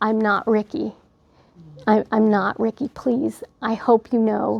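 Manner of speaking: mock tearful, crying voice. Retelling what was said to the mother through tears: imitating a crying plea. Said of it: "when I couldn't form words, I was saying".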